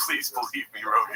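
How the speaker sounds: mock pleading, begging tone. Mocking a man in a video who looks like he is lying: mock pleading. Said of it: "He's like".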